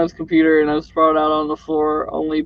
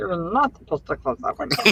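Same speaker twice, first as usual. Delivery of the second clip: put-on soft little-kid voice, temper tantrum tone; 2 semitones higher, 7 dB quieter than usual. Repeating the other speaker's line about a closed window, mock-tantrum Stitch kid voice. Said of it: "my little kid voice goes to Stitch".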